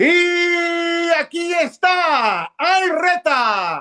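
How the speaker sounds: very high, loud, drawn-out announcer call, stretched Y. Doing the phrase a sports announcer opens matches with, in Raúl Pérez's voice. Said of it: "el tono de voz de Raúl Pérez en el micrófono".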